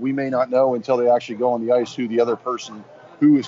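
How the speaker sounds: normal talking voice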